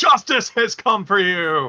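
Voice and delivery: full-throated, loud, taunting battle-cry shout. Player goading enemies down to the group, shouting. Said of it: "I'm gonna start shouting".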